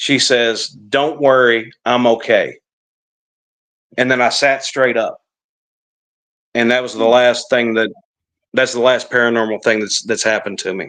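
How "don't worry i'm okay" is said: very slow, robotic smart-speaker assistant voice. Recalling hearing the device speak while half asleep on the couch, Alexa voice. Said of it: "in the Alexa voice".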